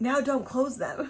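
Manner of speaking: sneering, snippy, snide tone. Retelling how a nurse answered with a snide response. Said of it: "with a snide response".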